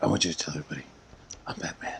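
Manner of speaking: whispered, fed-up and angry, very quiet. Imitating how Batman delivers his line: whispered Batman voice. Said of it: "And more of a whisper, like a pissed off dad".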